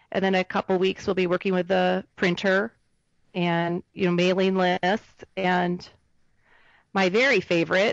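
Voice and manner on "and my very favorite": ironic, sarcastic tone. Listing the tasks of the coming weeks at work: sarcastic. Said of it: "which I'm being sarcastic".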